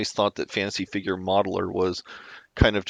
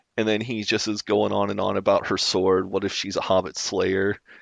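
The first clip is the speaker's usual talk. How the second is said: normal talking voice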